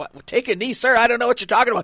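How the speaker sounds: high, baffled, bewildered, lost confusion. Retelling his reply as a man screamed at him at practice, retelling his own confusion. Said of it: "confused kicker facing yelling coach".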